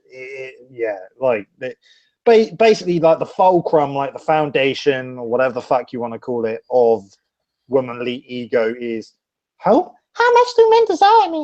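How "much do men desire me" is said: very high, put-on girly voice. Describing womanly ego, voicing a woman's question in a put-on girl voice. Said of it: "girl voice".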